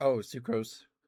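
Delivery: voice audibly cracking and breaking. Mid-conversation, the speaker's voice cracks on a word before apologizing: voice cracking. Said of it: "my voice is cracking".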